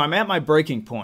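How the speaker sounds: ordinary delivery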